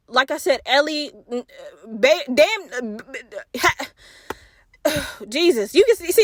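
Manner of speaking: furious stammering, slowed down. Viewer complaining about a show's unanswered questions, stuttering, pissed off. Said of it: "I'm stuttering because it pissed me off".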